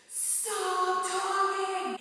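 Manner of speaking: put-on shrill very high yell, "stop" drawn out. Recounting blowing up at a class that kept talking: retelling her own yell. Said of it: "I eventually like blew up and was like".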